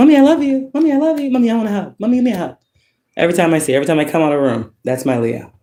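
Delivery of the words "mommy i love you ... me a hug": put-on very high, adoring little-kid voice. Retelling how the most loving child asks for hugs: imitating a loving child. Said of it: "will be loving and hugging and everything".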